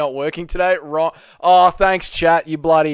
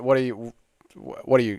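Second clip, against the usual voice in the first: normal talking voice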